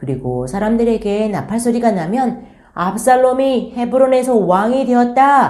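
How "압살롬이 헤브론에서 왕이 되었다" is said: high, loud proclaiming shout, projected outward. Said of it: "소리쳐야 한다고".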